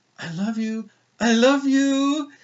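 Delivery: really sweet voice, very high and very slow. Retelling what a strapped-down man said to the speaker: imitating a really sweet voice. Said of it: "just like that with a really sweet voice".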